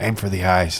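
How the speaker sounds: low, hushed half-whisper, close in the ear. A sock eases up beside you and speaks into your ear, in a half-whisper. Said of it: "it whispers in your ear".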